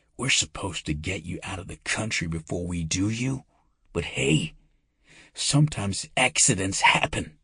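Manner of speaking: harsh hiss, breathed close in. An attacker holding a man in a chokehold speaks into his ear: hissed. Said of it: "the voice hissed".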